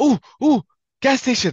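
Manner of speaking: high, loud, over-excited gasping coo. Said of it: "What are you getting so excited for?".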